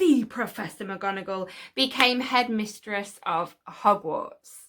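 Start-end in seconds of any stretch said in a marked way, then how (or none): 0.0-1.5 the emphasized.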